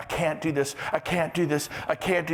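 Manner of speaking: mock, put-on whining teenager voice. Imitating someone who complains they can't do it: imitating a whiny teenager. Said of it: "you sound like a fourteen-year-old".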